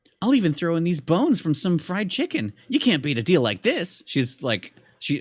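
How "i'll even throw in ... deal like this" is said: own voice, pitched much higher, character-like. Showing the voice she gave a game character: normal voice but higher. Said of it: "I just gave her like my normal voice, but higher".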